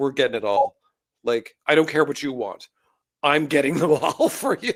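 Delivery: single-minded, obsessed, insistent tone allowing no arguments. Retelling what the mother said about collecting: imitating an obsessed mother. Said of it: "like a woman obsessed".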